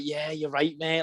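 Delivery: acted sarcastic delivery. Retelling a reply to a rival who guessed the move: imitating own sarcastic reply. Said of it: "trying to be sarcastic".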